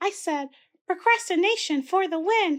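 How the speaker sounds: very high, squeaky puppet voice. Podcaster's puppet Blushy repeats what he said earlier; squeaky Blushy voice. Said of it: "He was the one that spoke earlier with the squeaky voice".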